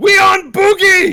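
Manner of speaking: very loud, shrill, high-pitched goblin yell. Voicing Bok Bok, king of the goblins, yelling out: Bok Bok goblin king yelling. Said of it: "He yells out".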